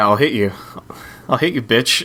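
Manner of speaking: menacing, surprisingly aggressive, fake-angry. Answering another speaker's "hit me" with a joking threat: mock aggressive threat. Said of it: "that was surprisingly aggressive".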